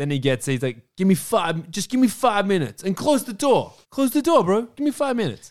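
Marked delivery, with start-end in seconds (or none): 1.0-5.5 very high, pitched-up voice. Retelling a scene from a film: Jay impression. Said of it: "it's a good Jay impression".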